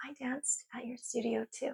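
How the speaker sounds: very quiet, soft, high, sweet little voice. Quoting a teenager who tapped her on the shoulder, in a sweet little voice. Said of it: "this sweet little voice taps me on the shoulder and goes".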